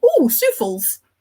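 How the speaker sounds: put-on broad Geordie accent, high and loud. Quoting a friend from Newcastle spotting souffles in a shop, in a Geordie accent. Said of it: "Souffles in a Geordie accent".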